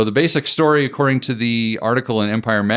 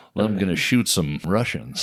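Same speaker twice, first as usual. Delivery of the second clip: put-on old-school TV host voice and delivery; 3 semitones lower, 5 dB quieter than usual. Joking about the show's spy plot: Johnny Carson voice. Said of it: "Why did I turn into Johnny Carson just then?".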